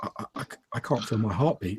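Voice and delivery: very soft, quiet, hushed, barely-there voice. Retelling a bystander's words while watching two people go at it: quiet voice. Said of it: "a quiet voice from Gregory go".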